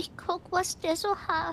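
put-on talking like a little old granny. A character asked what she is doing at a car answers: sounding like a granny. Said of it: "Du klingst wie eine Oma".

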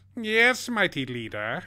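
screechy robot villain voice. Speaker answering a viewer's question about doing both bad-joke voices, Starscream voice. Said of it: "I am Starscream".

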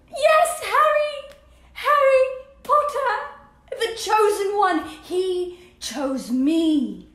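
high, delighted squeal with stretched-out "me". A character breaks big news to another, delighted squealing. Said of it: "[delighted squealing]".

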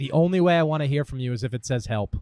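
ordinary talk

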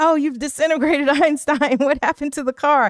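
mock-frantic, high, freaked-out blurt. Retelling a film scene where Marty freaks out: imitating Marty freaking out. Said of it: "Marty is freaking out".

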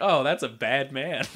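ordinary delivery

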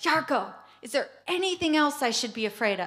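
put-on high calling yell. Retelling calling out to a companion while creeping around: retelling a yell. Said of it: "I yell".

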